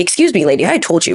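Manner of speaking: acted defensive, bruised-ego tone. Retelling a woman screaming that they're selfish; acting out an ego-driven retort. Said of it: "your ego immediately is like".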